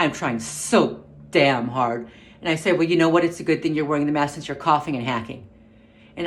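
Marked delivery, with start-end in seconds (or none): 2.8-5.5 mock irritated, testy, barely controlled tone. Retelling what was said to a coughing woman in an elevator: imitating own testy remark. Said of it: "I said it a bit testier than I should have".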